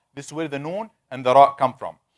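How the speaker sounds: plain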